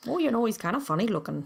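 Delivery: Minnesotan accent. Quoting a line from Fargo in its accent. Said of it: "That's, like, all over the place".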